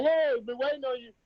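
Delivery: very proper, well-spoken way of talking. Retelling greeting her as she got out the truck, extra proper voice. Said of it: "did your voice get extra proper?".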